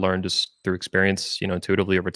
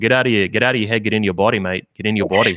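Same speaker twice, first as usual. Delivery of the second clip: put-on Australian accent throughout. Quoting a coaching crew's advice in an australian accent. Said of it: "in the Australian accent".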